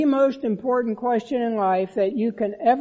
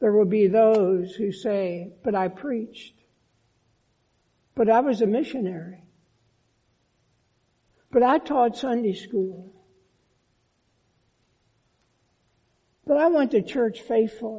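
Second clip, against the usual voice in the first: sad, sorrowful, faster. Speaking to listeners about those who will be turned away, said sadly. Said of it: "and I say this sadly".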